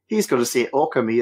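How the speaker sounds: usual speaking voice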